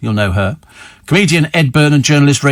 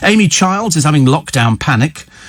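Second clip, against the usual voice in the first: normal talking voice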